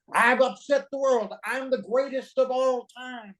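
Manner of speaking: shrill, very high, triumphant shouting. Recalling getting up on the roof of the rented house: retelling own shouting from the roof. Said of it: "started shouting".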